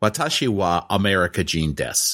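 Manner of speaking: put-on Japanese spoken with a thick American accent. Recounting speaking japanese to people who started laughing: strong american accent. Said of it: "speaking Japanese with like a real American accent".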